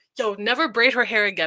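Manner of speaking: irritated, annoyed, fed-up voice. Retelling what he said to the friend who braided her hair, imitating an annoyed guy. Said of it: "he was like annoyed to the point".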